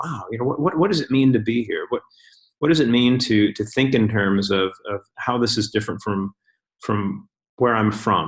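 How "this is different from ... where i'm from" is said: normal talking voice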